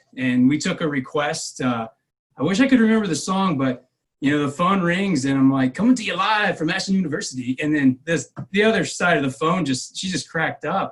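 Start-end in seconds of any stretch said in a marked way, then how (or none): 5.8-7.6 radio DJ announcer voice, pitched up. Retelling answering a request call on the phone, the speaker uses a DJ voice. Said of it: "in your D J voice".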